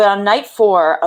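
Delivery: plain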